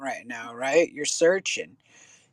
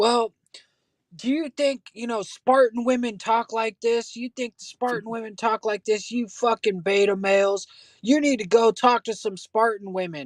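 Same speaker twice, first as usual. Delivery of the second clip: lecturer-like, lecturing tone; 5 semitones higher than usual. Retelling what a guy told a crowd, imitating a guy addressing a crowd. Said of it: "this one guy was telling us".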